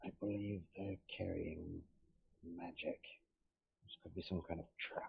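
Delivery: hushed, very quiet, breathy whisper, barely voiced. Narrating a game, voicing a character who whispers something after a perception roll: whispering. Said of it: "so he whispers something".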